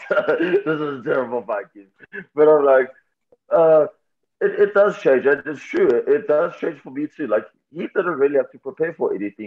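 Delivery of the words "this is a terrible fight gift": words spoken through laughter and giggling. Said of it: "Like, I'm laughing now".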